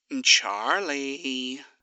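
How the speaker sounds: careful, cautious speech. He calls Charlie over to him, speaking carefully. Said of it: "he said carefully before continuing".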